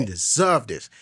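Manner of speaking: ordinary talk, nothing marked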